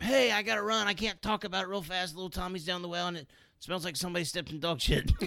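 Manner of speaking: urgent, high yelling. Describing answering a phone like an emergency, the speaker acts out yelling while walking out. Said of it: "you're yelling as you walk out the door".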